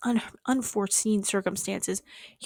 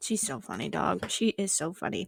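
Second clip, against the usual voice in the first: ordinary talk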